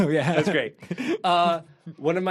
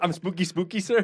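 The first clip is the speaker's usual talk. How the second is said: put-on sneaky butler voice. Retelling what the spooky butler says in the movie: imitating Emilio the butler. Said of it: "he says".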